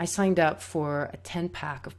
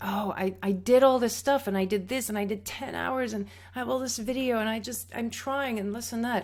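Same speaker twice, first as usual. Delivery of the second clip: high, tearful sobbing voice, breaking through tears; 7 semitones higher than usual. Retelling what the speaker told a teacher, reenacting speaking through tears. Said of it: "through tears".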